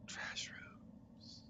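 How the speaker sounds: faint, eerie ghostly whisper, very hushed. Voicing an unseen presence heard in a player's mind: whispering entity. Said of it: "you hear somebody whisper".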